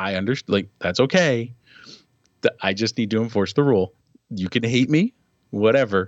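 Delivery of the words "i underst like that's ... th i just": plain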